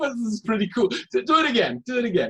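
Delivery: words broken up by laughing throughout. Asking the other to read the word again, laughing while talking. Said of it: "I'm sorry for my laughing".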